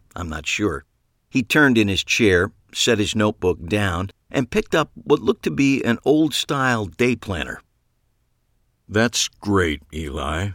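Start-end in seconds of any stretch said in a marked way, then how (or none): 8.9-10.5 very slow, overly calm, lower pitch. Reading a doctor's reply in a novel: very slow and too calm. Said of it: "he said very slowly and a little too calmly".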